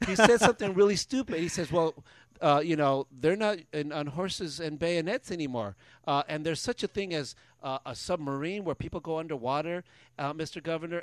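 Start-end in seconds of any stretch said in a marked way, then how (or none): none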